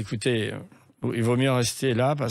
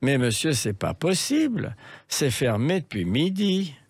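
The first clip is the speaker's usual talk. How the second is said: French with a put-on Swiss accent; 3 semitones higher than usual. Retelling a hotel manager's refusal on the phone: imitating a Swiss accent. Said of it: "il me répond avec son accent suisse".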